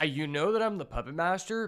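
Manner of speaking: ordinary delivery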